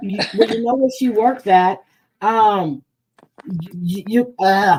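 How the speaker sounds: slow, angry stuttering, tripping over words. Speaker, mad, telling others they know where the woman works, stuttering from anger. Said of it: "I'm stuttering because I'm mad".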